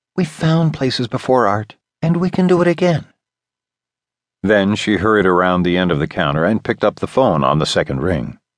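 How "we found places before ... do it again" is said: calm whisper, much higher. Narrator reads a woman backing away from a man, whispering more calmly. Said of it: "she whispered more calmly".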